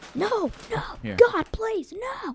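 mock angry begging tone. Acting out a famous Michael Scott moment: mock-angry Michael Scott no. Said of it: "famous Michael Scott thing".

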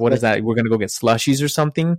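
ordinary talk

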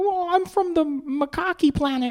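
put-on Gold Coast Australian accent. Imitating child extras in a Thor scene: imitating a Gold Coast accent. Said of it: "you sound like you're from the Gold Coast".

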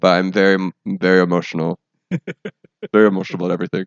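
low, flat, level, unvarying monotone. Talking about resolutions with the other speaker, in a monotone voice. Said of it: "I know I'm a monotone voice as I say that".

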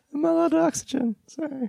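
strained, really high pitch. Wrapping up a two-person talk, both voices now gone really high. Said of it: "both of our voices have gotten really high".

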